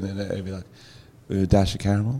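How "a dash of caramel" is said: muttered under the breath, quieter and slower. Retelling how he used to add to his latte order, muttered under his breath. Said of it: "under his breath".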